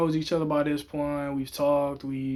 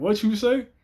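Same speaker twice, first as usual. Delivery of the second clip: mock startled, high, caught-off-guard surprised voice; 7 semitones higher, 5 dB louder than usual. Retelling own reaction when a friend said I love you: retelling a surprised question. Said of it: "I was just surprised".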